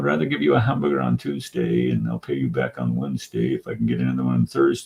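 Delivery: cartoon character voice with swooping, swinging pitch. Quoting the guy on Popeye after sounding like him: Wimpy voice. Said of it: "I sound like the guy on Popeye".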